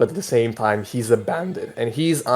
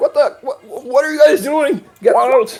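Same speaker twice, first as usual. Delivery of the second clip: annoyed barkeep voice, much higher, slower; 14 semitones higher, 5 dB louder than usual. A game narrator voices the barkeep reacting to the bandits' commotion; annoyed barkeep voice. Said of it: "The barkeep is like".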